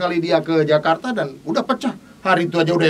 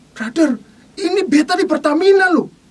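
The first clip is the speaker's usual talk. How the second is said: acted, worked-up, very high, exasperated outburst; 11 semitones higher, 4 dB louder than usual. Retelling a phone call with someone searching a Pertamina station; retelling someone getting angry. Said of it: "Dia mulai emosi tuh".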